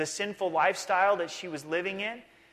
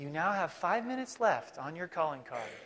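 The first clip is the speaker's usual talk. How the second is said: put-on pleasant computer voice, quieter; 5 dB quieter than usual. Remembering calling cards, speaker imitates the card's message: pleasant little computer voice. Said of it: "this pleasant little computer voice".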